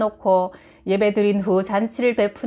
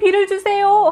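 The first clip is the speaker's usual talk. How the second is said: put-on high children's voices in prayerful unison chorus. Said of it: "하고 합창하듯이 기도하는데".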